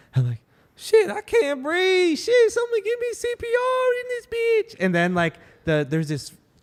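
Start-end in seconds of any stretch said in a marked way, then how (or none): 0.8-4.8 very high, loud, put-on breathless distress. Retelling falling down at an expo to get attention: imitating pretended breathlessness. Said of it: "I pretended that I was, like, I couldn't breathe".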